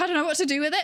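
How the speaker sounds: mock flustered, at-a-loss, panicked, helpless voice. Retelling a lab reaction going too fast: retelling own panic. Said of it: "And then I was panicking".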